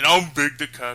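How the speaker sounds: put-on dopey cat character voice. Introducing oneself at the start of a video: Big the Cat impression. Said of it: "I could do a better Big impression than that".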